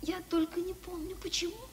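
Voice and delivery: soft, delirious whisper. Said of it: "Это обыкновенный бред".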